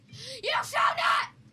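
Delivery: slow, high, loud, dramatic shout.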